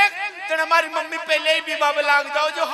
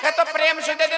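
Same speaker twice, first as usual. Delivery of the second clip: ordinary talk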